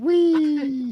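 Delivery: high, squealing superheroine voice. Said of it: "she's flying, she goes".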